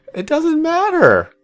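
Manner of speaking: odd, very high, slow put-on voice.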